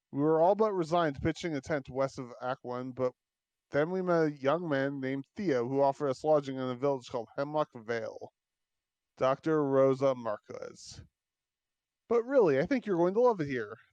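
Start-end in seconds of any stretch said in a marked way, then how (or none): 12.0-13.6 calling out loudly with voice raised. Voicing a character calling from a truck window: shouting. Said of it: "Theo shouts from".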